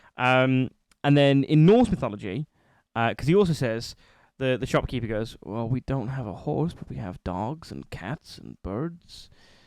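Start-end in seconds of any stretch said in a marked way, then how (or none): 5.5-9.3 bad, fake put-on American accent. Retelling a shopkeeper's reply in a story: terrible American accent. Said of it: "that terrible American accent there".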